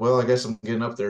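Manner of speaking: ordinary talk, nothing marked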